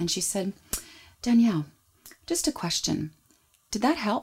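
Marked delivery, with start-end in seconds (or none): 1.2-4.2 super calm, unruffled, non-judgmental, gently pitched-up voice. Retelling what the midwife said after a scream during labor, imitating a super calm midwife. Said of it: "she was super calm and non-judgy about it".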